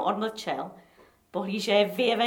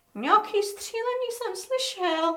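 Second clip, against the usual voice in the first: put-on quavering, trembling, very high old pensioner's treble; 9 semitones higher than usual. Asked what is happening outside, the senior secretary answers in a trembling treble voice. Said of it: "pravil Tylínek třaslavým diskantovým hláskem".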